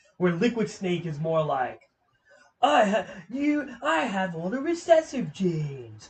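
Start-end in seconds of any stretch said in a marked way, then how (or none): 2.6-6.1 put-on slow, high, drawn-out English villain accent. Contrasting two villains, then quoting Liquid Snake, Liquid Snake English accent. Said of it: "talking with his English accent".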